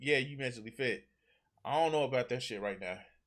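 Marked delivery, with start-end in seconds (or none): none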